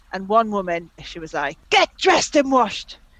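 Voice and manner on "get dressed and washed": loud, high-pitched shout. Reading out a listener's message, imitating a woman shouting. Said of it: "I'm shouting because I'm assuming she was shouting".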